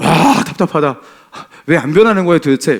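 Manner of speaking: exasperated, sighing delivery. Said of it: "막 이러면서 한숨 많이 쉬었어요".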